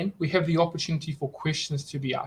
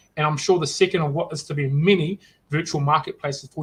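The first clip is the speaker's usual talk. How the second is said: ordinary talk, nothing marked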